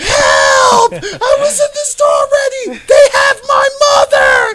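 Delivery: high-pitched, loud, panicked screaming.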